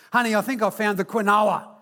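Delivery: put-on, loud, carrying public-address style call. Husband retells calling out to his wife with people around, retelling a loud call-out. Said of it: "in a loud voice that could be easily heard".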